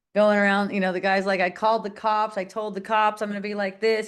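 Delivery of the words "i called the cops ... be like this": usual speaking voice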